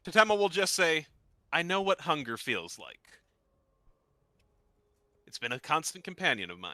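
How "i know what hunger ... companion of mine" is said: quiet voice, much lower pitch. Playing Tatema, speaking to Ein while trying not to wake her, speaking quietly. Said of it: "will say fairly quietly, trying not to wake her up".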